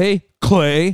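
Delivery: forceful, emphatic, said with real force. Retelling how a man greeted the speaker by name, imitating a forceful greeting. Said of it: "he like said it with like a force".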